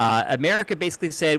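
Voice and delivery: ordinary talk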